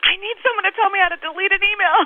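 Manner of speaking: very high-pitched, frantic, panicked scream. Retelling standing up in a Kinko's to ask for help deleting an email: retelling own scream. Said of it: "I just stood up in the Kinko's and I screamed".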